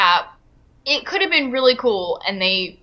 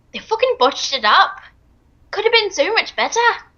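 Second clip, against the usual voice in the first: high, contemptuous, scornful, disdainful British accent; 7 semitones higher than usual. Reacting to something that was botched: disdainful british accent. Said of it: "was that your disdained voice of a British accent".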